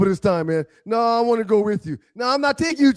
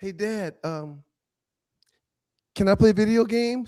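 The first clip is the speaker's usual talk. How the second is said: put-on young girl's voice. Retelling what a daughter asks her dad: imitating Morgan. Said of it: "Morgan will often come in the room and say".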